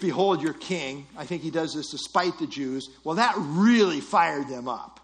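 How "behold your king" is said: acted, mock-sarcastic tone. Retelling a scripture scene to listeners, acting out a sarcastic remark. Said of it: "So he sarcastically says".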